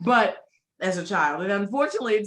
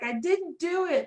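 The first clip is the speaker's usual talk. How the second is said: put-on mournful small child voice, high and very slow; 8 semitones higher, 3 dB quieter than usual. Describing a Polar Express scene, the speaker quotes the kid in trouble, imitating a sad child. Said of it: "the sadness in this poor child's voice".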